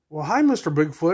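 ordinary talk

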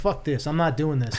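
plain

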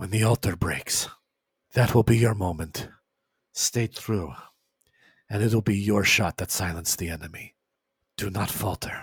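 close, soft, secretive hushed half-whisper. Voicing a seer who leans in to a player: half-whispering. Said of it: "she starts to whisper to you".

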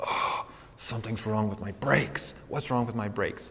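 angry seething voice. Retelling walking in the door after a weekend away, acting out fuming. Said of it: "I'm fuming".

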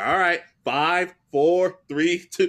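mock sing-song mocking voice. Recounting a card game, the speaker retells a friend mocking another player with a mocking countdown. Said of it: "Joey actually starts mocking him".

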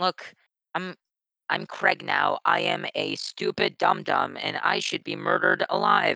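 slow, mechanical robot voice. Speaker on a call shows off the ability to go robot, in a robot voice. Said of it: "I just have the ability to go robot".

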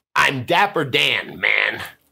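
commanding, authoritative voice. Trying different readings of a catchphrase, now saying it with authority. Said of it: "Now say it with authority".

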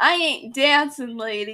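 put-on loud, thick Brooklyn accent laid on heavily. Retelling a story scene where Harry is told to open the ball: Harry in thick Brooklyn accent. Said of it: "In his thick Brooklyn accent".

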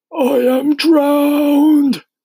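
very high, loud, gasping words. Reading a story, an old grasshopper spits out water; gasped. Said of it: "gasped the old green grasshopper".

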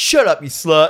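mock, sudden, hostile, aggressive yelling. Retelling a scene where a character yells out: imitating someone yelling. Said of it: "single guy just yells out".

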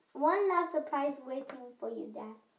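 plain reading voice

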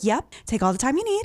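calm, polite service voice. Retelling the mother answering a prank call: imitating calm customer-service voice. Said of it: "She'd be like; very calm, very nice".

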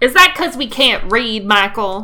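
loud, put-on Southern accent. Joking about how few Wikipedia biographies are about women: put-on southern accent. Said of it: "I'm sorry for doing a southern accent just then".

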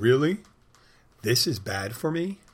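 loud, swooping, sarcastic, put-on astonishment. Retelling own past reply to a warning about smoking: sarcastic mock surprise. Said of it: "look at the cigarette with wide eyes and go".

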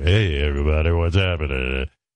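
low rock radio DJ voice. Recalling a rock radio DJ he listened to: imitating Al Bernstein's DJ voice. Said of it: "he'd be like, he's like that, you know".

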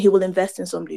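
ordinary talk, nothing marked

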